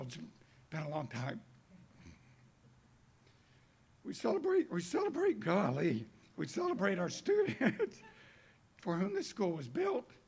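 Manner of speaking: a little emotional, halting, swooping voice. Speaker at a new school's celebration, thanking attendees, a little emotional. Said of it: "I'm sorry I'm a little emotional".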